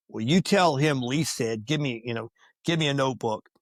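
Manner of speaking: usual speaking voice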